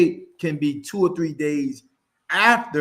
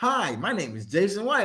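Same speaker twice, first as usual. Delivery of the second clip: fake, put-on professional corporate voice; 4 semitones higher, 4 dB quieter than usual. Showing how someone sounds when using a corporate voice, put-on corporate voice. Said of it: "got a corporate voice".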